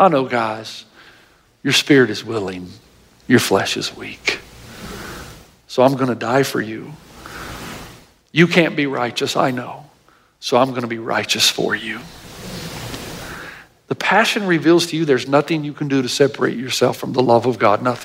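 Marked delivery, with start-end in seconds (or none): 0.0-12.0 low, gentle, loving, tender voice. A speaker acts out what he says to the guys, in a tender voice. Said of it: "Do you hear the tenderness in his voice instead?".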